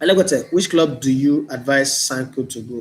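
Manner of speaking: plain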